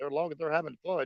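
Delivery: ordinary delivery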